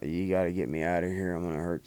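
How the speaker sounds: put-on pleading, begging tone. Retelling begging the guards to be let out: retelling begging the guards. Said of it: "I begged the, the guards".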